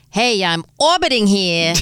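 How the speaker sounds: wise-talking, tough New York street accent. Host voicing what the Earth would sound like, My Cousin Vinny-style voice. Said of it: "Here comes my cousin Vinny".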